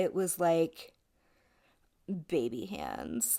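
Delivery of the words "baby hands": mock deep, very low flirty voice. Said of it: "but like in a very flirty way".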